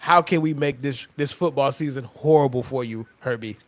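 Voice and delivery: ordinary talk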